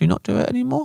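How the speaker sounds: play-acted sad, squeaky, very high little voice. Retelling asking staff about a dish gone from the menu: imitating own sad question.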